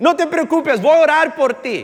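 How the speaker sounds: shouting.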